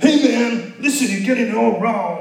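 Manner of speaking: high, loud cool-dude voice. Acting out Paul telling off the churches: imitating Miriam. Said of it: "That was my impression of Miriam".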